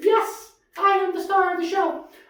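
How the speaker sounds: very high, loud puppet voice. Answering whether there is anything to say: Lambie puppet voice. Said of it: "You're a puppet".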